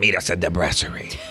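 put-on gremlin voice. Quoting Soph during a story, imitating her in a gremlin voice. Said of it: "She's saying in that gremlin voice?".

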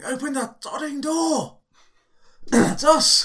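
screeching yell, very high pitched and very loud. A character with his back against the door calls to be let in, shouting. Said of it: "I'm shouting".

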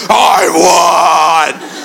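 put-on devilish evil voice, won drawn out. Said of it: "the voice is from Satan himself".

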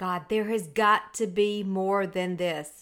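fed-up, slow, drawn-out yell let loose. Recalling slamming the office door, sick and tired, retelling own past yell. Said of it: "And I yelled".

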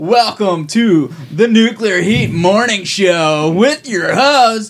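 over-the-top radio DJ voice, high and slow. Introducing a pretend morning show and its host, exaggerated radio DJ voice. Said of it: "I'm doing the voice".

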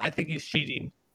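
acted, whispered, breathy, jokey, jabbing delivery. Retelling what a beaten opponent said for the camera: imitating a joking tone. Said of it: "in a joking manner".

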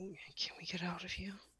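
groggy, sluggish, half-awake, slow, soft pleading. Alana, feeling feverish and asked if she is sick, replies: groggy, slow. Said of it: "She nods slowly, groggily".

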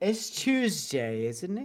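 soft, lightly done put-on British accent. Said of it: "I can't even do a fucking British accent".

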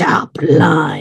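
hushed, breathy growl delivered in a whisper. Recapping a scene, speaker acts out Doc answering Waverly, retelling Doc's growl. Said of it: "he's growls".

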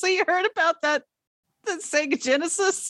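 very high-pitched voice, cracking and breaking. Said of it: "Charlie's voice like cracking as she goes".

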